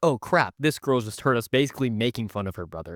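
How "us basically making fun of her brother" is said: ordinary talk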